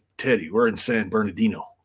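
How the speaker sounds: mock mutter under breath. Retelling telling a co-worker something quietly: imitating saying it under his breath. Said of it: "I tell him under my breath".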